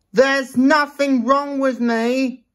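very high-pitched, cross, snappy voice. Narrator reads the engine's reply to a kind question, said crossly. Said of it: "replied Thomas crossly".

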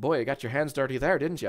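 put-on Irish accent. Quoting what a man says to someone, imitating an Irish accent. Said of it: "imagine with a more Irish accent".

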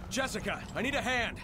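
very high, shrill yelled shout. Playing Resident Evil, the speaker calls to Jessica for help, shouting. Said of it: "Why are you shouting?".

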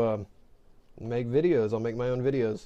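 ordinary talk, nothing marked

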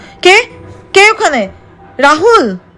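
suddenly screaming out. Mithila, coming down the stairs, sees a man standing there and calls Rahul in a sudden scream. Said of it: "হঠাৎই চিৎকার করে উঠল".

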